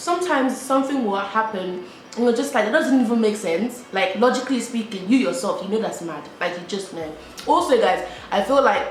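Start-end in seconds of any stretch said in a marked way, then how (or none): none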